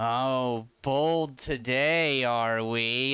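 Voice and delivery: very slow, low, drawn-out sarcastic drawl. Game master voicing a woman looking down at a player's bet, sarcastic tone. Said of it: "in that sarcastic tone".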